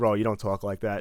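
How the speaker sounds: ordinary delivery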